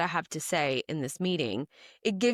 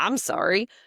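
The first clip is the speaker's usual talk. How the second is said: mock sarcastic defensive tone, louder; 2 semitones higher, 5 dB louder than usual. Acting out how someone replies to criticism: imitating a sarcastic, defensive apology. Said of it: "very sarcastically and defensively".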